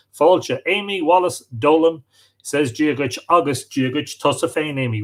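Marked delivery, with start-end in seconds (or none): none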